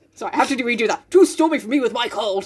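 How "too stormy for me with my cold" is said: put-on upper-crust, posh British gentleman accent. Reading aloud and voicing Jo's line: posh British man voice for Jo. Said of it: "Posh British man".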